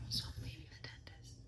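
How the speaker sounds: hushed whisper. Calling someone while supposed to be using the bathroom, whispering. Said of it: "I'm whispering because I'm supposed to be using the bathroom".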